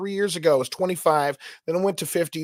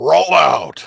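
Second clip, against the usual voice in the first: robot voice at full volume; 9 dB louder than usual. Telling the other speaker which voice they're doing, then demonstrating it: Optimus Prime voice. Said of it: "that's the voice you're doing".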